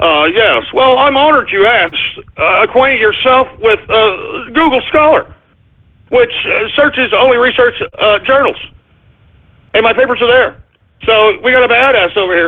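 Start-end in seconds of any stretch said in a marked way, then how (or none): 0.0-10.6 mock self-important, pompous, sarcastic voice. Reading out a tweet reply in a mocking voice: imitating Neil deGrasse Tyson, pompous sarcastic. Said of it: "let me say it in this pompous ass, freaking sarcastic, pompous voice attitude".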